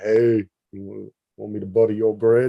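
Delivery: put-on manly guy's voice, played up. Retelling a reply to a guy who rolled up on them, put-on deep voice. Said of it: "with the deep voice".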